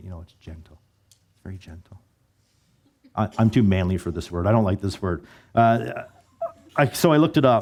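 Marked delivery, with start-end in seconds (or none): 0.0-2.0 very quiet, soft, hushed, breathy whisper. Explaining the word gentle, which feels soft-spoken: whispering the word gentle. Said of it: "kind of whisper it when I say it".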